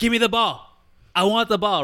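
put-on Greek accent. Retelling a player's demand for the ball in a Greek accent. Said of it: "I like your Greek accent".

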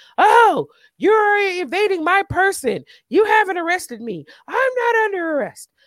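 high, shrill, screaming holler. Retelling a woman being taken out by two officers: retelling a woman screaming. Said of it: "She's screaming and hollering".

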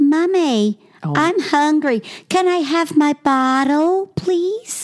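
put-on very high, slow talking-doll voice, American accent. Describing creepy talking dolls, speaker imitates one: Missy Kissy doll voice, American accent. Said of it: "With the American accent".

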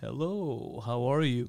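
low, slow voiceover announcer voice. Describing an older rich man who used to do voiceovers: imitating his voiceover-style voice. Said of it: "he talks like".

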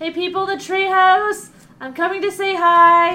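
very loud, shrill, top-of-the-lungs yell. Player voicing a character heading to the treehouse, yelling at top of lungs. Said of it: "She's gonna yell at the top of her lungs".

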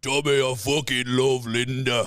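deliberate, slow tough-guy voice, each word drawn out. Doing Peaky Blinders impressions for a friend: Arthur Shelby impression.

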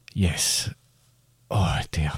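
out of breath. Answering whether they are okay, out of breath. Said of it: "I'm very out of breath".

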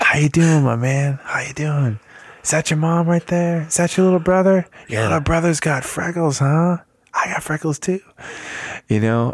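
mimicked soft whisper. Speaker retells a friendly man chatting to them about their family; imitating a gentle whisper. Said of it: "he's whispering at me".

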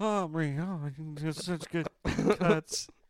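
acted, dreamy, high, drawn-out sleep-talking voice. Teasing another speaker about talking while asleep: imitating someone talking in sleep. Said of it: "you were sleeping going like".

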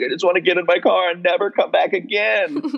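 mock tearful, high crying wail. Retelling a scene where Ariana is crying: imitating Ariana crying. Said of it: "And she's, like, crying".

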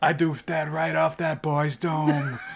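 put-on American accent. Speaker quoting a sketch, in the voice of the American film version's actor. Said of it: "You're doing the voice of the guy who did the American film version".

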